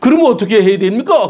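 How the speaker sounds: put-on high, combative, defiant tone. A preacher acting out people answering God back, in a mock-defiant challenging tone. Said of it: "덤비는 거예요. 말의 억양이 달라지는 거죠".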